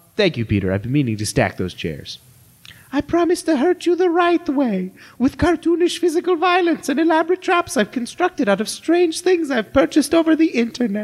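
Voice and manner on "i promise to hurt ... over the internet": very high, cartoonish voice. Reading a script aloud as a cartoon character: Dr. Feelbetter voice. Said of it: "I'll read it like Dr. Feelbetter".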